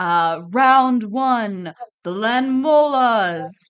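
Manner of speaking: loud ringmaster-style arena announcer call-out. A game master voices an announcer introducing the creatures, as an arena announcer call-out. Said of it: "You hear like an announcer call out".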